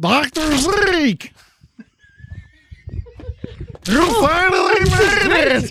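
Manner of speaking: garbled vocoder voice. A character with a built-in vocoder speaks, in a garbled half-drowning voice. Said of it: "the sound comes out kind of garbled".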